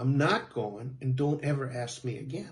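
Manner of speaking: ordinary delivery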